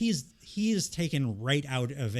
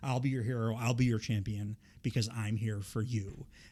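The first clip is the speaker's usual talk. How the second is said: put-on ominous tone; 3 dB quieter than usual. Quoting a performer's new promo line, in a mock-ominous tone. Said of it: "with a very ominous tone".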